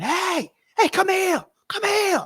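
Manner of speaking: high-pitched, calling out.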